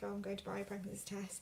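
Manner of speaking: normal talking voice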